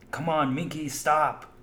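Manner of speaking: mock exasperated pleading tone. Retelling him calling to their dog minky from the office, mock-frustrated. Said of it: "he would just get so frustrated".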